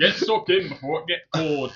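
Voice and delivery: loud, put-on Yorkshire accent. Voicing an imagined butch woman, in a Yorkshire accent. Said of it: "Yorkshire accent. That's great".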